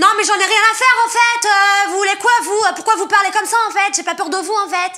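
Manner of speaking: very loud, fed-up anger. Demonstrating to the other speaker how she sounds when angry, pretend angry. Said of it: "Alors moi quand je m'énerve, ça donne ça".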